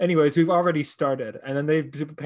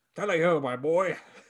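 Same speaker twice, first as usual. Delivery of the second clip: put-on grandpa voice; 2 semitones higher than usual. Discussing cartoon characters' alignments, doing a Ferb's grandpa impression. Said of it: "That's my impression of Ferb's grandpa".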